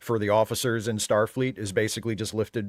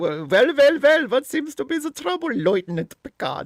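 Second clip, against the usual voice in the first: put-on loud, high German accent; 6 dB louder than usual. Showing how oddly q pronounces a word to picard, do a q voice with german pronunciation. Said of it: "he gives like the German pronunciation / He's doing Sigmund Freud".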